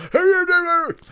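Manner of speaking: high, loud, stupid-sounding put-on voice. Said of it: "that voice that I make, isn't it stupid".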